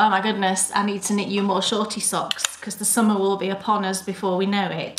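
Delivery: ordinary delivery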